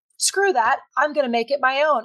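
ordinary talk

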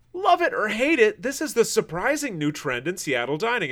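high voice of a woman in her twenties. Reading a Seattle Times headline aloud in a 20-something young lady voice. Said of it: "I had to read that like it was some 20-something young lady".

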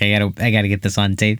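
plain

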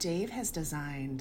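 close, low, hushed half-whisper. Talking about Dave to listeners while he is away, half-whispering. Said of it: "I don't know why I'm whispering".

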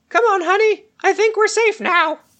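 tiny, very high small creature voice. Narrating to players, a voice speaks from between two rocks: small voice. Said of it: "you hear a small voice".

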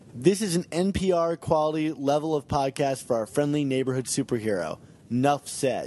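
ordinary talk

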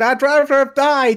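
loud, high, mock scream in disbelief. Retelling how they screamed at the TV while watching, retelling own scream at TV. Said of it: "I was literally sat here screaming at my TV going".

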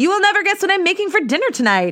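very high, quick, teasing joking call-out. Retelling calling out to her roommate from the kitchen, retelling a joking call-out. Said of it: "I jokingly call out".

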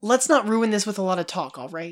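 ordinary delivery

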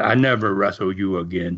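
put-on Dutch accent. Speaker retelling what Dutch told Roy after being pinned, imitating Dutch's Dutch accent. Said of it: "in that accent, you know, he was a Dutchman".

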